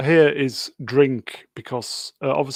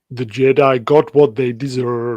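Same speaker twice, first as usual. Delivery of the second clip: put-on Austrian accent, louder; 6 dB louder than usual. Rereading the line after being asked for an austrian accent. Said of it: "read it in your best Austrian accent".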